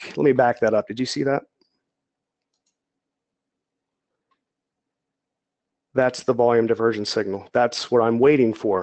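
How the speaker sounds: exhausted, flat monotone, stuttering and halting. Exhausted after a week of work, walking viewers through a chart setup in monotone. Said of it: "sounding kind of monotone and stuttering".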